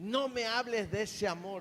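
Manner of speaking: high, restrained put-on demon voice crying out. Retelling how a demon shouted at a preacher: imitating a demon shouting. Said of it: "el demonio se volvió a gritar".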